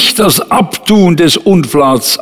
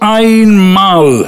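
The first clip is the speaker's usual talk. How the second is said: einmal said with strong, hard stress; 4 semitones higher than usual. Reading a passage aloud to listeners: strong stress on 'einmal'. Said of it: "ich habe ein Wort ganz besonders jetzt betont. Und zwar ist es das Wort einmal".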